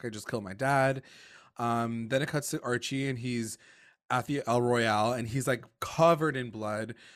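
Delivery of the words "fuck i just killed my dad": crying, tearful voice. Retelling a show scene where she freaks out: imitating someone crying. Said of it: "She starts crying".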